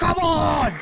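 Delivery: put-on screaming coach voice. Playing a talking dumbbell screaming at someone working out: imitating a screaming workout trainer. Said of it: "screaming at you".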